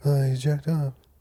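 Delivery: put-on hushed voice. Mimicking the other speaker's talking about jacking off voice, imitating a hushed quiet voice. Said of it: "This is your talking about jacking off voice".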